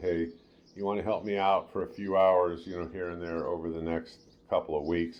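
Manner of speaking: ordinary talk, nothing marked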